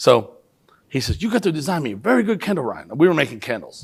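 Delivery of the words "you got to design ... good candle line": put-on heavy Chinese accent. Retelling a mentor's request, imitating Robert's heavy Chinese accent. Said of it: "So I'll do Robert's accent".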